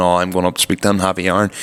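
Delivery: plain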